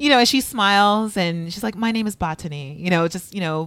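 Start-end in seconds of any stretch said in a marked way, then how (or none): 1.8-2.8 put-on gracious, regal voice. Retelling how a contestant calmly corrected her name: imitating Botany, gracious and regal. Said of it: "very gracious and regal".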